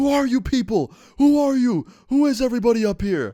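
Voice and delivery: very high, loud, confused, distressed scream. Retelling how a confused man woke up screaming: imitating someone screaming. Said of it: "screaming at the top of his lungs".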